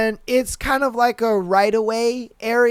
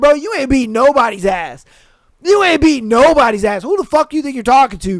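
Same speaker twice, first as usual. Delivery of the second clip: put-on angry, heated tone; 2 semitones higher, 5 dB louder than usual. Retelling a road argument with a honking driver, retelling a heated retort. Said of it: "I was kind of heated because of the horn".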